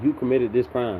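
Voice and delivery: ordinary talk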